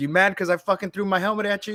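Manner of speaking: high-pitched, angry, goading swearing. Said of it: "he's cussing it out".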